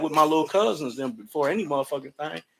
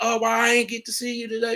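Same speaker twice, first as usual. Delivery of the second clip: put-on high, teary boo-hoo crying; 8 semitones higher than usual. Acting out how she would boo-hoo at him: imitating someone boo-hooing. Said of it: "if she boo-hooing like".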